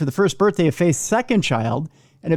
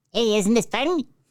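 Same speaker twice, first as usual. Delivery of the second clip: bright, bubbly, helium-style cartoon mouse voice; 4 semitones higher than usual. Joking about a woman who inhaled helium: Mickey Mouse voice. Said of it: "She was gonna talk in a Mickey Mouse voice".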